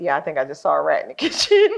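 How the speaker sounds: mock calm, low, even delivery. Quoting someone in a story, imitating a calm remark. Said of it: "Maylani calmly was like".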